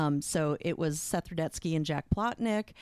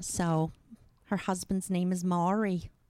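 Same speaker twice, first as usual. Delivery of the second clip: broad, exaggerated Jersey accent laid on thick; 2 semitones higher than usual. An actor shows how her stage character from Jersey talks: Shirley Summers Jersey accent. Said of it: "she's from Jersey, and she talks like this".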